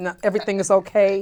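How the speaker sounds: put-on stiff, rigid, guarded, buttoned-up tone. Mocking how men act when hiding pain: imitating a stiff, guarded man. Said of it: "try to be all stiff and like".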